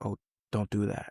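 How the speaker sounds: soft, hushed half-whisper. Retelling an inner voice heard before a fight: imitating a half-whispering voice. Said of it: "a voice that would whisper and say".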